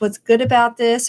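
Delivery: ordinary talk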